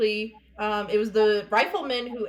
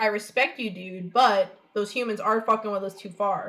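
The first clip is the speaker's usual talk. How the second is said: ordinary delivery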